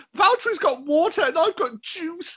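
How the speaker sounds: put-on very high pitch, complaining like a child. Doing an impression of Lewis Hamilton complaining on team radio: Lewis Hamilton impression. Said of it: "my impression of Lewis Hamilton".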